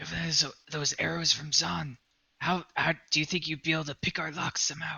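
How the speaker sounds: hushed, secretive half-whisper, kept low. Speaking in character to another character, half-whispering. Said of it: "I'm whispering to him".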